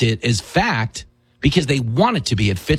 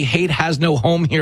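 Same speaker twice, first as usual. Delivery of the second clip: ordinary talk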